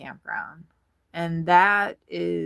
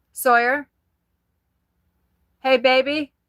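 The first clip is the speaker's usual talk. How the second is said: loud, pitched-up calling out; 7 semitones higher, 6 dB louder than usual. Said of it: "I have to say it really loud".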